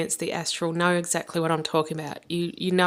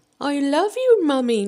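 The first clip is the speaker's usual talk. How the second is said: high, loud dog voice; 9 semitones higher, 5 dB louder than usual. Retelling a vision in which the speaker's dog spoke, in a dog voice. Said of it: "like in a dog voice".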